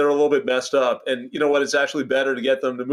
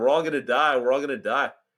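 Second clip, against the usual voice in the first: normal talking voice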